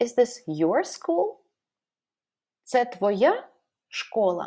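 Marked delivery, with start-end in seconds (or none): 2.6-4.5 твоя lifted in pitch, following word dropped. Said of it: "we may raise our voice at the word that is the most important".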